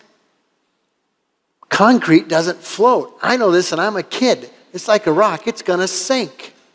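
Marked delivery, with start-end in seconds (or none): 1.7-6.5 inner panic, panicked tone. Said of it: "inside, I panicked".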